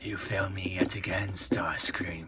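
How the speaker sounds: soft, whispered villain voice.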